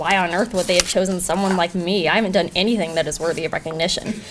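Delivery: plain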